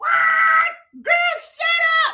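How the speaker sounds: high, loud, shocked shout.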